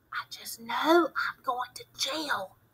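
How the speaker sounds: soft, hushed whisper under the breath. A boy pressed against the narrator's shoulder speaks to him, whispered. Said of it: "he whispered".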